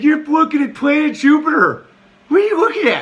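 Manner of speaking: dopey mocking voice, very high and loud.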